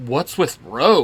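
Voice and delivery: ordinary talk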